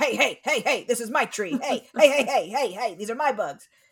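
blunt, crude, territorial back-off tone. Joking about how moths jam bats, playing a moth: playing a moth warning off bats. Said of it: "more sophisticated than just going".

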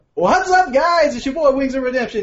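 very high, loud, upbeat and happy-sounding. Speaker shows the other speaker how he does his intro, smiling upbeat voice. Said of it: "all I'm doing is smiling right here, so it makes it sound like I'm really fucking happy".

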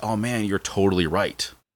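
plain

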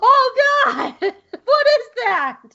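terrified yell, very high-pitched, very slow, drawn out, loud. Recalling a first reaction to a terrifying sight, retelling a yell. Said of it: "I very vocally just yelled".

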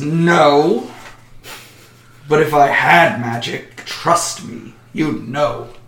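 very slow, drawn-out, almost snarling delivery. Voicing a dragonborn answering a dwarf who questions her: almost snarling. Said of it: "looks down at him with almost a snarl".

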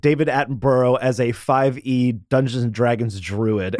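usual speaking voice

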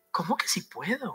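mock taken-aback, incredulous disbelief. Reading Jesus' answer to a man asking healing, in own tone: imitating Jesus, incredulous tone. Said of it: "yo le voy a poner la mía".

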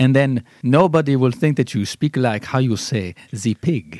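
put-on French accent. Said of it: "speak with the French accent".

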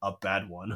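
put-on muttered aside. Retelling a cartoon scene, imitating Aang muttering under his breath. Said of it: "under his breath's like".

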